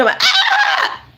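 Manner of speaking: very high, shrieking witch scream.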